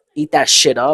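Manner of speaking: ordinary delivery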